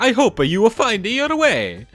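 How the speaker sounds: very high, loud, squeaky little cartoon voice. Repeating a line just said, now in a little Mario voice. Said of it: "put that in a little Mario voice".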